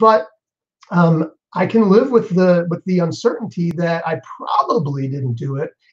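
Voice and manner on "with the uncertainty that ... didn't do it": probably stressed hard with a rise. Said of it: "Emphasis on the probably".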